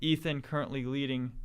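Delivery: ordinary talk, nothing marked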